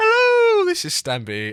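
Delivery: stretched out, high-pitched and loud. Imitating a remembered YouTuber's video greeting: bad Stampy impression. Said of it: "I can't do his voice".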